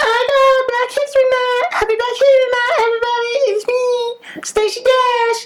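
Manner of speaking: very high, chirpy, clueless-sounding voice. Retelling a stage greeting that looked clueless: imitating Stacey Dash, clueless. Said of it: "She was like".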